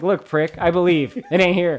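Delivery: put-on loud sarcastic tone. Retelling a movie character's line to prove the other wrong: imitating a sarcastic retort. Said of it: "She's just trying to prove her wrong".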